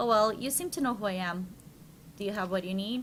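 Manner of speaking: usual speaking voice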